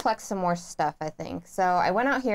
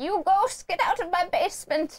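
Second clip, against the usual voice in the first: put-on very high, drawn-out old man yelling; 10 semitones higher than usual. Retelling how the other player yelled at ghosts: imitating an old man yelling. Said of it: "you yelled at 'em like an old man".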